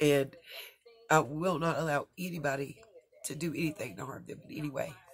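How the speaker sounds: emotional, choked-up voice full of feeling. Speaker vowing to protect the women who once saved their life, emotional. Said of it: "I'm just emotional".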